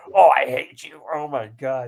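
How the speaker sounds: outraged, ringside wrestling announcer outburst. Retelling a commentator reacting to a wrestler: imitating Jim Ross's outraged commentary. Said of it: "you could hear in his voice".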